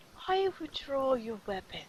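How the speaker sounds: hushed, very quiet, barely audible half-whisper. Voicing Ren as another character grips his weapon: half-whispering. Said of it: "totally whispering that".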